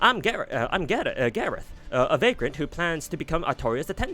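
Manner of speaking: put-on bright, cheery, chipper British accent. Voicing a character introducing herself: chipper British accent as Gareth. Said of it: "a chipper British accent".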